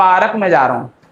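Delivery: ordinary talk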